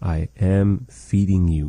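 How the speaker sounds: ordinary delivery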